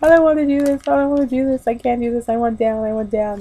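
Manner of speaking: tearful pleading broken up by sobs. Speaker recalling being stuck on a ropes-course tree, retelling a sobbing plea. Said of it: "I'm just like sobbing".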